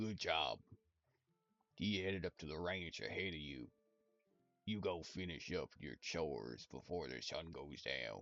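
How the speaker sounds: very deep, very soft, hushed put-on voice. Reading a manga aloud and voicing a character: voicing a character very low.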